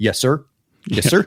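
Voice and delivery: put-on Louisiana good old boy voice. Recalling a documentary figure who always said this: imitating a louisiana good old boy. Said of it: "the good old boy from Louisiana".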